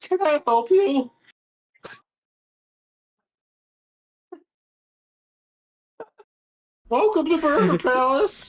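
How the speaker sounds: put-on very high teenage voice. Retelling a drive-thru visit, imitating a sixteen-year-old drive-thru kid. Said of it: "like a sixteen-year-old kid. He's like".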